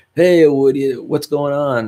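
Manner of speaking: loud calling voice. Showing how loudly one must talk over road noise: demonstrating yelling over noise. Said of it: "I have to kind of yell out like".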